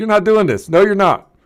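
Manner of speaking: loud yelling, shouting. A player's character resists during a tabletop game, yelling. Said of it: "I'm yelling at no".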